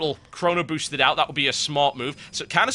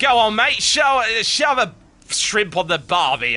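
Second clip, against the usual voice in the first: put-on loud, slow, drawn-out Australian accent; 6 semitones higher, 5 dB louder than usual. Mimicking someone's impression of the speaker, in an Australian-sounding accent. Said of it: "it was more like Australian".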